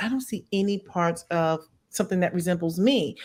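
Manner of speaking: ordinary delivery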